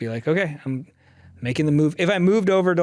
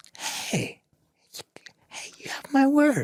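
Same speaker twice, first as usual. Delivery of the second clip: speaking softly, quietly, with a higher voice; 10 semitones higher, 5 dB quieter than usual. Giving your word after another speaker asks for a promise: talking quietly. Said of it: "You're talking so quiet".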